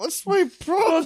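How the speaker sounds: weepy mock sobbing, pitched very high. Retelling getting thrown out of a frat house, imitating own crying. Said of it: "and be like".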